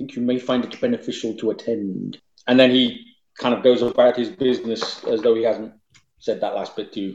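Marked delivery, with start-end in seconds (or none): 0.0-2.2 hushed, soft, secretive half-whisper. A marquis speaks to the lady so her father can't hear, soft half-whisper. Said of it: "in a kind of soft whisper".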